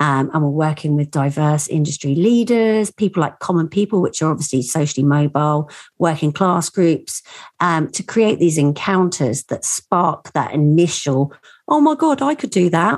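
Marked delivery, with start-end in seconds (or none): 11.7-13.0 high, youthful voice of a student. Describing the encounters, the speaker voices a young person: young person's voice. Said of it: "Me as a 49-year-old woman doing a young person's voice".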